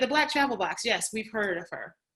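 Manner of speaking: ordinary delivery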